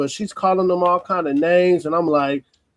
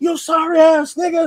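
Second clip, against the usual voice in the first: very high-pitched, shrill put-on woman's yell; 10 semitones higher than usual. Retelling what a woman said in a dispute over a phone: imitating someone yelling. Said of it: "the woman yelling".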